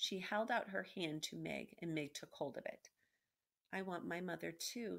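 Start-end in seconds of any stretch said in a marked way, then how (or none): 3.7-5.0 soft, gentle, much quieter. The princess, holding a girl's hand, speaks to her softly. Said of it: "said the princess softly".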